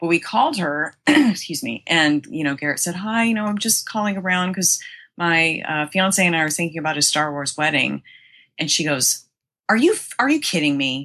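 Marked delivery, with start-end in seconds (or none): 9.7-11.0 nasty, mean delivery. Retelling a phone call asking about a Star Wars wedding, imitating a woman sounding mean. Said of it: "And she said it like real mean".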